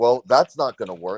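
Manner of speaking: ordinary talk, nothing marked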